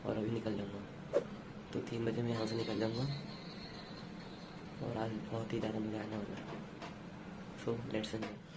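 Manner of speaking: soft, hushed, quiet speech.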